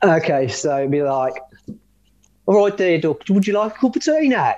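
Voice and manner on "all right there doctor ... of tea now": Birmingham accent, pitched up. Demonstrating an accent for a co-speaker to mirror back, Birmingham accent. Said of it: "a Birmingham accent".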